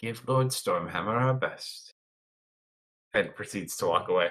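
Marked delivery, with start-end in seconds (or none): 0.0-1.9 drops into a hushed stage whisper. Voicing a character who speaks while getting ready to walk away: half-whispering. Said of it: "just kind of whispers to you".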